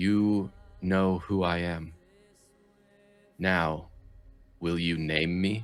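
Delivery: gentle, soft, yet strong and steady voice. Narrating a voice that every one of the players hears, soft but firm voice. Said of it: "soft but strong and firm".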